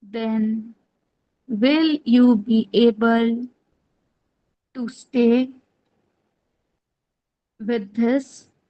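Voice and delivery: flat, slow, drawn-out, halting monotone. Speaker showing listeners what a monotonous voice sounds like, monotonous slow voice. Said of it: "Suppose if I speak in this way".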